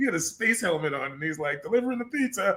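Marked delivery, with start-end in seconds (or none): 1.6-2.6 high, dubbed Italian man voice. Imitating the dubbed voice in an old movie: an Italian-sounding dub voice. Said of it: "it was like an Italian guy".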